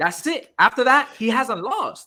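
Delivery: very slow, loud, drawn-out, passionate delivery. Arguing a point with the other speakers: said with passion. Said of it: "you said that with so much passion".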